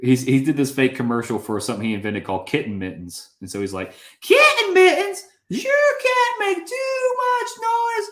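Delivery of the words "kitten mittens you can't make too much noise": very high, loud, slow, annoying pitchman voice. Recalling a fake commercial from a favorite show, doing an annoying Charlie Kelly voice. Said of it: "that a really annoying voice".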